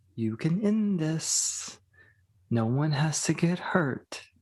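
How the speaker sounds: private stage whisper. A figure keeping an eye on everything speaks only to you, whispering. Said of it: "he's just whispering to you".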